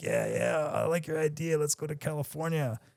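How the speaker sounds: soft put-on Boston accent. Speaker quotes Richie, who first started talking to him: imitating Richie's Boston accent. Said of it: "He had like the Boston accent".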